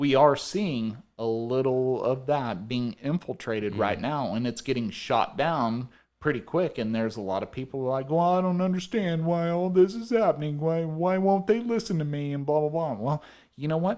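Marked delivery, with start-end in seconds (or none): 8.4-12.9 put-on high, whiny, complaining moan. Mocking newcomers who complain, the speaker quotes them: whiny put-on voice. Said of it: "Was that your Californian accent?".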